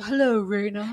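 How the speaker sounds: stiffly formal, very proper, prim gentlemanly voice. Imitating the audiobook's male character voice: imitating a very proper male voice. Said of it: "he was very proper".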